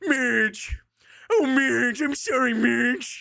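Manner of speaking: shoddy cartoon voice, very high, very slow, stretched. Showing chat a bad Homer Simpson impression. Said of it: "people get mad at my Homer impression because of how shit it is".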